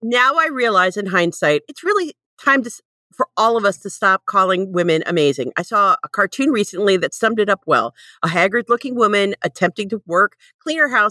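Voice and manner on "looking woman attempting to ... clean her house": ordinary talk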